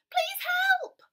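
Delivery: frantic, very high-pitched, loud, panicked cry. A cheetah being swept downstream calls out to Leo; panicked cry. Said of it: "cried the cheetah in a panic".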